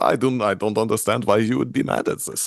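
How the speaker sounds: funny, silly put-on German accent. Describing their story, the speaker voices the character Death: Death's funny German accent. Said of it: "has a funny German accent".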